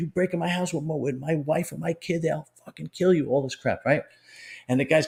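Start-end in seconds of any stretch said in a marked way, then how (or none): 0.0-3.3 play-acted raw, high-pitched, threatening scream. Retelling how a man attacked someone in the street: imitating someone screaming. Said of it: "he's screaming at him".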